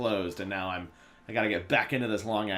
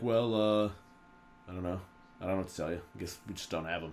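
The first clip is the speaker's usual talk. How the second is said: mock airy, condescending, nonchalant indifference; 3 semitones lower, 5 dB quieter than usual. Retelling what the airline desk agent said about lost bags: imitating condescending nonchalance. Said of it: "the most condescendingly nonchalant".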